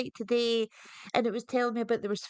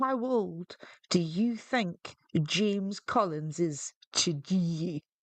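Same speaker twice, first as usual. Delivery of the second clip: low, level, flat reality-show announcer narration voice; 5 semitones lower than usual. Quoting the question from a video, Big Brother voice. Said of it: "That's me big brother voice".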